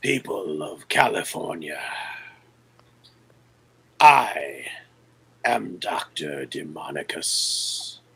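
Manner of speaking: half-whispered, breathy, raspy, wheezing villain voice. Game master voices a masked figure addressing people over loudspeakers, raspy and wheezing. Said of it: "a raspy, wheezing voice starts echoing".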